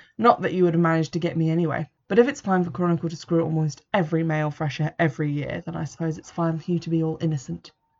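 ordinary delivery, nothing marked

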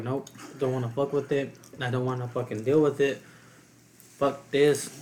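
plain

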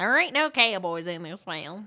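Yankee-style accent. Arguing about a film, speaking in a Yankee accent. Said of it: "Now you're like talking like a Yankee".

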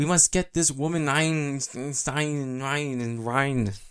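slow, over-the-top, exaggerated put-on German accent. Imitating voice actors in an episode doing German accents. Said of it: "try to make the best German accents".

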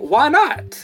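high, loud, puzzled tone.

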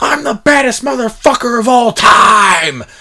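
all-out acted scream, loud and high-pitched. Retelling what he screamed on the family show, retelling a scream. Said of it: "just screams".

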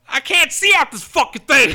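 high, loud, whiny complaining tone.

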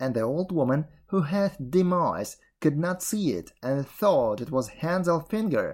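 ordinary delivery

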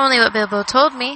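ordinary delivery

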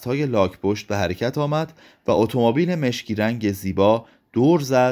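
ordinary delivery

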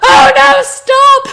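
in-character scream. Playing a character who warns others, screaming and pointing at the track. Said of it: "I start screaming and pointing at the track".

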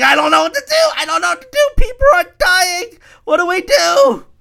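put-on panicked woman voice. Speaker mocks a female character in a TV series; mock-stressed panic. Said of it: "She'll be like stressing".

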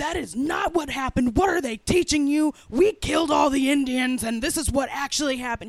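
very loud, high-pitched yell. Recounting how a parent scolded them at home over something they had just said, acting out the scolding as put-on yelling. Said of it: "And my dad yelled at me".

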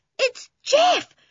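very high, thrilled, excited shout. Someone in a dark tunnel hears an answering call, excited shout. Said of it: "shouted Toby, dancing in the dark tunnel with excitement".

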